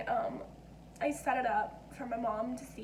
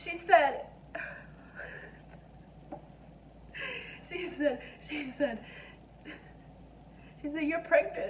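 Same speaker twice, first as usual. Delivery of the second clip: crying, tearful voice; 2 semitones higher than usual. Telling how her sister Kaylee reacted to her pregnancy test, crying. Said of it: "I'm crying for some reason".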